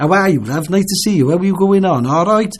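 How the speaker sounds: Cardiff docks Welsh accent. Showing how people where the speaker lives talk: Cardiff dockyard accent. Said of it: "where they talk like that".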